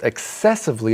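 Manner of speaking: stress on second syllable of excessively. Comparing noun and adverb forms, stress on second syllable of excessively. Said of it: "it's on the second syllable".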